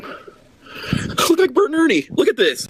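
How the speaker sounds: high, swooping tearful speech through tears. On a stream with a hundred people watching, crying while talking. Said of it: "watching me cry like a baby".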